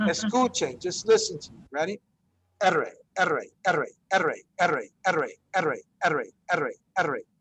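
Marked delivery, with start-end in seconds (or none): 2.6-7.2 very fast rapid-fire speech, lower pitch. Teaching a rolled R drill, saying it very fast. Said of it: "just say it as quickly as you can".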